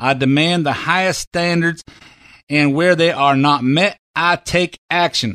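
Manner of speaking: put-on Southern accent. Doing his Jeff Sessions voice, not making fun of him: Jeff Sessions Southern accent. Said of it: "my Jeff Sessions voice ... I'm just imitating it".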